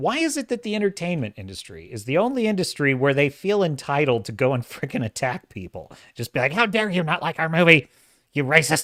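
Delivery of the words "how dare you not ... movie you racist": sarcastic, indignant, sneering tone. Mocking an industry that attacks critics: Salty Cracker impression. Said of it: "it's my Salty Cracker impression".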